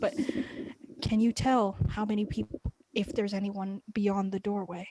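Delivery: in a whisper. Playing a character in a narrated group story: whispering. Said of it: "this is all in a whisper".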